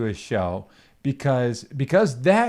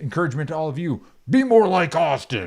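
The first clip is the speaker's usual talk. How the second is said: pro wrestling promo-style wrestler voice; 2 semitones higher than usual. Giving a shout-out to the listeners, in a wrestling voice. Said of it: "Am I doing okay with the wrestling voice there?".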